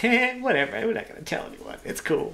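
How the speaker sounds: high, half-whispered, careless brush-off. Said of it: "and you're gonna, like, go".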